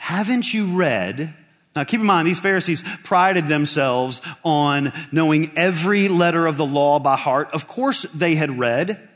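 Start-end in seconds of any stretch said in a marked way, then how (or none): 0.0-1.3 mocking, sarcastic, pointed delivery. Retelling a question put to the Pharisees, imitating a sarcastic question.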